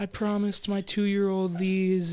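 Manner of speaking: acted tearful, sobbing voice, crying through the words. Retelling how a customer reacted when her card was declined: imitating a woman crying. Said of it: "she just starts immediately crying".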